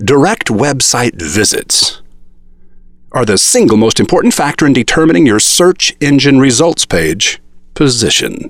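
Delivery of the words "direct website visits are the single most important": ordinary delivery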